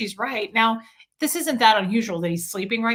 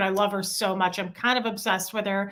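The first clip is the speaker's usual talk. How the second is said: normal talking voice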